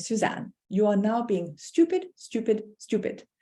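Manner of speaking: put-on crisp, precise English accent. Recalling her tutor speaking to her at her table, in a crisp English accent. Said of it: "in this crisp English accent".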